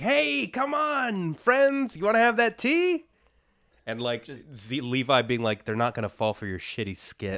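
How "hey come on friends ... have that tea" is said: very high-pitched, loud hollering. Recapping an episode, acting out Hanji calling to friends: imitating Hanji yelling.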